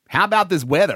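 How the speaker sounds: put-on American accent. Speaker teaches American phrases, demonstrating one in a put-on American accent. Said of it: "The next American phrase I would like to do is".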